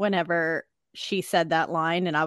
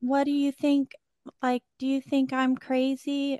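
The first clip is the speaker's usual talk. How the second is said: cutesy, high, little-voiced delivery; 8 semitones higher than usual. Quoting a character talking with Mitzi at the end, imitating her little cutesy voice. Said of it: "in her little cutesy voice".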